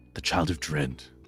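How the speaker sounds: annoyed, irritated sigh. Voicing a character who sighs and turns around when asked, annoyed and sighing. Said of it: "He sighs and he turns around and he's looking really annoyed".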